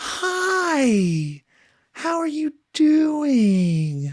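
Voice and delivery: put-on, very high, slow, sing-song little voice. Imitating mom greeting someone: imitating mom's put-on little voice. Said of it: "putting on a little voice".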